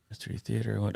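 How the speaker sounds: hushed voice. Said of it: "now I'm whispering the comments".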